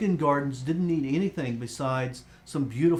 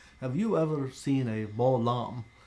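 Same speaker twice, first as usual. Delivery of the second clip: terrible put-on French accent. Recalling a TV ad where a man brings a lamb to the camera: terrible French accent. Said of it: "in this terrible French accent".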